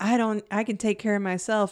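ordinary talk, nothing marked

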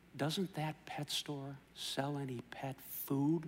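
very faint, barely audible half-whisper. Telling a joke, voicing a dying parrot: imitating a faint half-whisper. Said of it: "in a very faint whisper".

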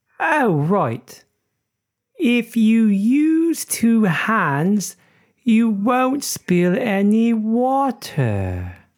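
put-on Cornish farmer accent. Telling a joke about Cornwall, voicing the farmer's reply in a Cornish farmer accent. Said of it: "sorry about the accent".

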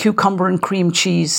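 ordinary talk

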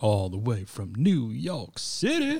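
put-on drawn-out commercial catchphrase voice. Introducing the hosts, saying where one comes from: Pace Picante "New York City" voice. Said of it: "New York City in that voice every podcast".

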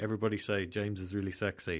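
ordinary talk

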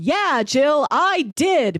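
put-on very slow, high, dripping sarcasm. Retelling a character's answer to a question: imitating a sarcastic reply. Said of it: "she says it like that, where it seems sarcastic".

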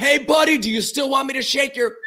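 mock very high shouted yell. Retelling calling out to a buddy outside after being kicked out: imitating own yell. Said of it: "and then I yelled".

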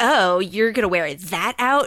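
catty, snide, backhanded tone.

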